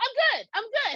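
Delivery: mock very loud, deliberate, drawn-out, high-pitched voice. Retelling turning down cocaine after friends' advice: imitating her own loud reply. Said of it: "very, like, you know, vocal there".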